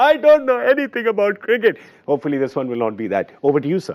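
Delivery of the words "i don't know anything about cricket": fake sobbing, higher. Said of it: "underpants and crying, going".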